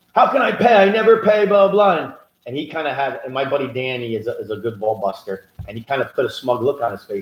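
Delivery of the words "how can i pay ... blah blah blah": freaked-out, high-pitched screaming. Retelling how a client reacted to her accountant: imitating someone screaming. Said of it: "She starts screaming at him".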